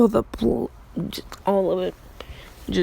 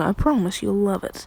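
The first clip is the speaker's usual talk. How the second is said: ordinary delivery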